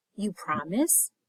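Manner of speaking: hushed, small voice, soft, just above a whisper. Reading a story where a voice answers a plea: soft, quiet, just above a whisper. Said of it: "louder than a whisper, but still soft and quiet".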